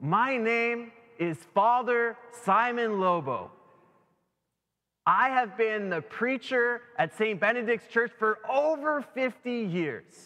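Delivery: stately, grand, declaimed proclaiming delivery. Telling a joke, a preacher introduces himself to Saint Peter in a booming voice. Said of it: "he booms".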